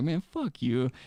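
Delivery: muttered grumble. Retelling a reply to a customer at the counter: imitating muttering under breath. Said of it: "under my breath".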